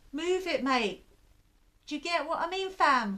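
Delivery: put-on London accent slipping out. Imagining telling people in a queue to move along, London accent. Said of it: "that was my London coming out".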